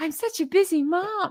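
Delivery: voice pushed way up high. Mocking someone's complaint about being busy: Megan impression. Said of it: "I sound like Megan".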